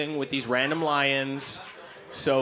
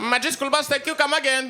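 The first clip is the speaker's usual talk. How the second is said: cartoon Indian accent, much higher, louder; 12 semitones higher, 4 dB louder than usual. Retelling how a cartoon role got recast, in an Apu voice. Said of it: "Call up the guy who did Apu on Simpsons".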